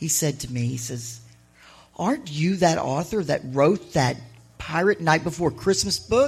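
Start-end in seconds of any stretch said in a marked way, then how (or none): none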